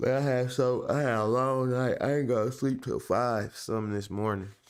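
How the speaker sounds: tired, words broken up by a yawn. After a long night up till five, talking to y'all while yawning. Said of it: "excuse me y'all for yawning".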